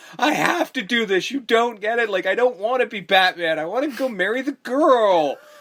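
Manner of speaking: put-on high, whiny, sulky petulant spoilt-kid voice. Retelling a character's complaint about not wanting to be Batman: imitating a petulant child. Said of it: "he's back to the petulant child thing again".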